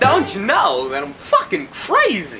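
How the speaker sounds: awful, overdone, very high swooping voice. Ending a movie review with an awful Christopher Walken impression. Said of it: "That was an awful impression".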